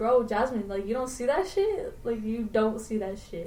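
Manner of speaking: usual speaking voice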